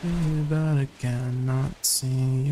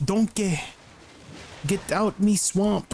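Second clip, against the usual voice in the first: put-on Scottish accent, high pitch, slow, drawn out; 7 semitones higher than usual. Doing a quick bit after saying a character is Scottish: put-on Scottish accent. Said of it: "She's Scottish".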